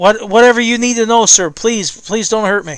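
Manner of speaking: put-on crying-out young man's voice. Voicing the man being questioned, in the voice of a young man crying out. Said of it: "the voice of a young man crying out".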